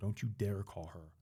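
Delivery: mock aggressive, forceful, hushed voice. Retelling warning a man who came to help not to call anyone, own aggressive tone. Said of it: "I was very aggressive with my tone".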